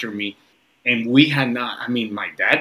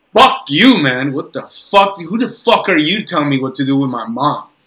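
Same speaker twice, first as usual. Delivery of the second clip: loud, furious, hard-swearing outburst, acted out; 4 semitones higher, 7 dB louder than usual. Retelling how he blew up at an older cadet: imitating himself blowing up. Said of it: "I just blow up on the guy".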